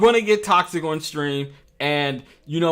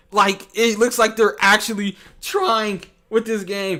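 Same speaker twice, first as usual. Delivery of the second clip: voice breaking mid-sentence, pitched up; 6 semitones higher than usual. Speaker talking about a game they will play on their channel, voice cracking. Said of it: "And my voice just cracked".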